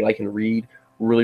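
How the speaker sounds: ordinary talk, nothing marked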